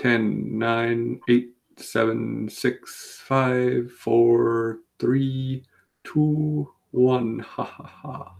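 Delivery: every number stretched out slowly. Counting down the last seconds of a bid: Count impression. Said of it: "like, a count, uh, impression".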